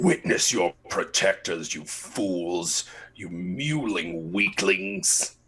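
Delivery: very slow, deliberate, drawn-out taunting villain voice. Voicing a figure laughing from the street at everyone: booming taunting voice. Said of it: "loud, booming laughter coming out from the street".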